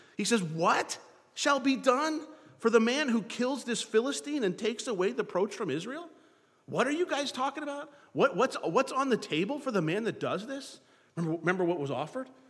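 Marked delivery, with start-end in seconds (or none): 0.4-10.8 mocking, incredulous sarcasm, pitched up. Speaker retells a scripture verse as the giant comes out, acting out sarcastic question. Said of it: "some sarcasm in his tone of his voice".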